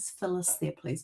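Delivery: very soft, small, hushed voice. Retelling a phone call from an unknown caller, in a very quiet voice. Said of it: "this very quiet voice says".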